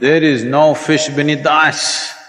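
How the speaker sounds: loud, resounding, booming godlike proclamation voice. Telling a story, voicing the unseen voice answering the man on the ice: booming voice. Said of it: "a booming voice said".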